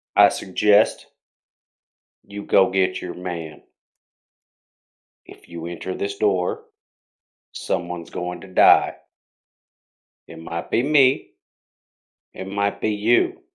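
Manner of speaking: grave, solemn, very serious somber voice. Acting out one of the people talking, making the voice very serious and somber. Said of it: "make my voice very serious and very somber".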